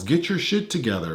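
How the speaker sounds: normal talking voice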